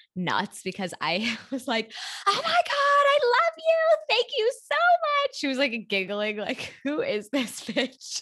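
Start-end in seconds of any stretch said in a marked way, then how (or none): 2.3-5.4 very high, loud, acted thrilled scream. Speaker recalls getting the call and thanking the embryologist, retelling an excited scream. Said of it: "I literally was screaming to the embryologist".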